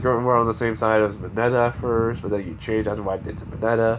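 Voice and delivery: plain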